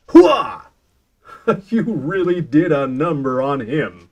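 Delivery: cheesy, booming superhero voice, very slow and drawn-out. Voicing a hero after defeating a villain, in a superhero voice. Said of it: "in like a superhero voice".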